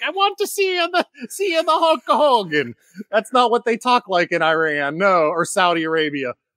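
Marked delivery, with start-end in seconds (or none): 0.0-2.7 put-on Italian accent, higher. Retelling what the Saudi prince said, in a Mario Italian accent. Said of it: "the Mario".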